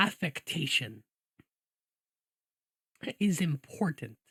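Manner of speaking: very low, deep, dropped-down delivery. Showing how an accent carries personality, a speaker tries a deeper voice. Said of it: "Let me do a deeper one".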